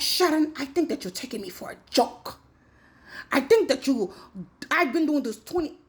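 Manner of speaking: mock heated, furious angry rant. Retelling what the questioner said to her: imitating someone going off. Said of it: "went off".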